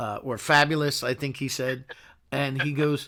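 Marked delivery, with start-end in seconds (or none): none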